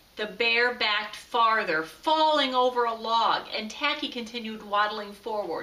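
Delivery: ordinary delivery, nothing marked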